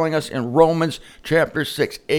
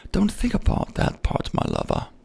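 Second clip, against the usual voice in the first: put-on whispered, soft, breathy, sexy little voice; 6 dB quieter than usual. Voicing sin speaking to the speaker, in a put-on sexy little voice. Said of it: "It'll put on a sexy little voice".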